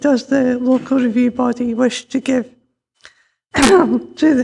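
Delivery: voice giving out partway through. Reading out the main issues for the local review body, losing voice. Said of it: "lost my voice".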